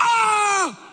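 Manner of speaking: high, agonized scream. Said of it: "screaming and yelling".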